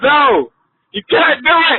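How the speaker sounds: impassioned, very high-pitched pleading tone. A longtime listener leaves a voicemail for the radio hosts, passionate. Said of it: "This is passion in my voice".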